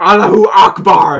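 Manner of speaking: final screamed cry. Telling a story about a man who died holding a grenade; retelling a scream. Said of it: "he just screamed into his mind".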